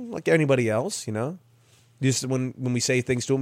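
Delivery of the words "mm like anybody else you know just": plain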